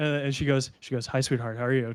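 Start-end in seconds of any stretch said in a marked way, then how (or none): 1.1-1.9 teasing playful voice, lower and quieter. Voicing a bar owner greeting a young regular she knows well: playful tone. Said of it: "A very, like, playful kind of".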